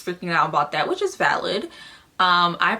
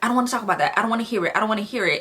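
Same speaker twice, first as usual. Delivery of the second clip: fed-up, exasperated, annoyed, frustrated outburst; 4 semitones higher than usual. Retelling how someone refused to hear the news: imitating an annoyed, frustrated outburst. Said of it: "she was just acting annoyed and frustrated".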